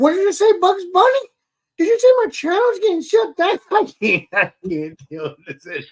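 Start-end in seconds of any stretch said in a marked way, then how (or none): 0.0-4.3 weird, funny, very high, swooping silly voice. Replaying talking in a funny voice while another guest was on: funny weird voice. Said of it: "I was starting to talk like a weird voice, but it was a funny voice".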